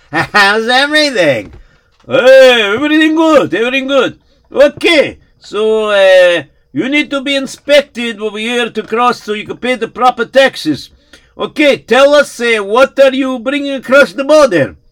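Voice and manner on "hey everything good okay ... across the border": very high, loud, breezy voice in broken English. Narrating a story, voice Dimitri checking a traveler at the border, as Dimitri the border inspector.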